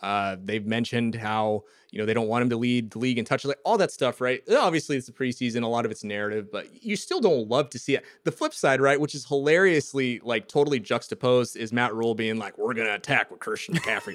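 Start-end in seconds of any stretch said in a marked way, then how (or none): 12.6-14.2 put-on spoken in a Southern accent. Imitating a coach announcing plans to attack: Matt Rhule impression, Southern accent. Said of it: "a Southern accent".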